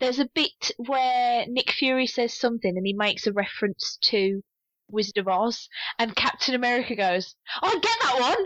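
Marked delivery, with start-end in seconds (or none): 7.6-8.5 acted delighted, eager excitement, pitched higher. Retelling a film scene where a character gets a reference: imitating excited delight. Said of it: "he's so excited that he gets this reference".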